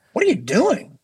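mock exasperated pleading, high and laughing.

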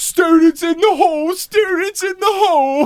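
blubbering dim-witted voice. Imitating an audiobook character reporting students awake: Stephen Fry's Filch voice. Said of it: "Stephen Fry's Filch voice".

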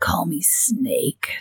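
soft, low growl with the voice dropped. Mocking a movie character's catchphrase, in a Snake Plissken growl. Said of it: "Does a growl where he's like".

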